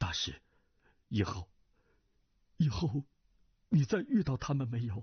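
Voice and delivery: tremulous, quavering, trembling voice. Narrator reads a character putting a question to the master, in a trembling voice. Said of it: "颤声问道".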